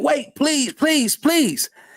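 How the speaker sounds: put-on, pleading, begging tone. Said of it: "We seen him pleading like".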